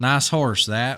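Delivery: clumsy, bad put-on Southern accent. Claiming he can do a better Southern accent than the one just heard: shitty Southern accent. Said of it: "I can do a better Southern accent than that".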